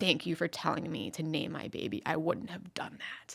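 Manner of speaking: fierce, intense, low, hushed voice. Retelling what a mother said to her: retelling a fierce low voice. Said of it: "She said it like fiercely, like low voice".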